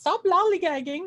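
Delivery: poor put-on English accent, very high, shrill and loud. Quoting what a tour guide kept saying, in a bad English accent. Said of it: "I really apologize for my my my my English accent".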